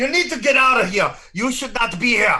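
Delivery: angry, high, threatening shouted yell. Voicing a guard threatening a player to leave: yelling threateningly. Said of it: "What are you yelling at me?".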